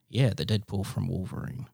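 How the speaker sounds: muttering under breath. Retelling how one person answered the group under their breath, retelling a quiet mutter. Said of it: "quietly went under their breath".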